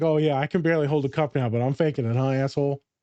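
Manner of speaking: normal talking voice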